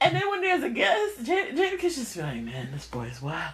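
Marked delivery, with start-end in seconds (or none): 2.4-3.5 soft mumble under the breath. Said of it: "he be mumbling stuff under his breath".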